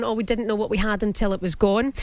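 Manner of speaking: plain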